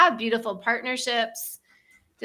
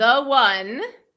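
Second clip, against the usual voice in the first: slow, deliberate and powerful. Repeating an affirmation after the guide, slow and powerful. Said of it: "let's just say it slowly, you know, with with power".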